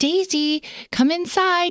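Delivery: mock, high call, as sweet as could be. Retelling how she called someone to come inside, retelling a sweet call. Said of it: "as sweet as could be".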